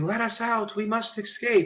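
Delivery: very high, frantic, panicked crowd scream. Voicing people at a locked gate who scream to escape: screaming townsfolk. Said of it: "people that are screaming".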